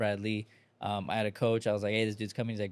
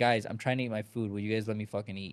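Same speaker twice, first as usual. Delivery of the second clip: exasperated, angry, fed-up tone. Retelling how someone got mad at people bothering him while eating: imitating angry Grant Cardone. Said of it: "he got mad".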